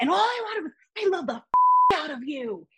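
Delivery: mock heated shouting rant, high and swooping. Recounting a man yelling at the speaker, imitating him yelling. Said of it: "he's yelling at me and being like".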